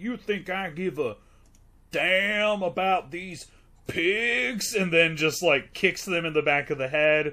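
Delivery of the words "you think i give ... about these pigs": high, unconvincing fake Southern accent. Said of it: "he seems so unconvincing when he's like".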